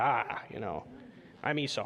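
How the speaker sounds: hushed rugged outdoorsman voice. Reading scripture aloud, voicing a son posing as his hunter brother: lowered outdoorsman hunter voice. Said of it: "lowering his voice here, like the outdoorsman hunter".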